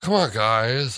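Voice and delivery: wispy, airy voice letting plenty of air through. Describing the boyfriend character from a film to friends: airy Sean voice. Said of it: "He kind of had that like kind of airy voice".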